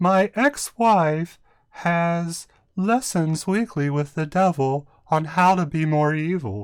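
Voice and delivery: high, slow delivery. Quoting a comedian's one-liner: Emo Phillips impression. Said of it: "my emo impression".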